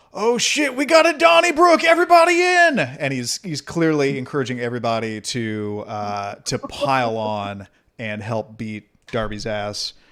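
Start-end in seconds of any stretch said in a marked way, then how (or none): 0.2-2.8 very loud, high megaphone shout. A game narrator voices a character raising a megaphone as a fight starts, calling through a megaphone. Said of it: "he holds up the megaphone and he goes".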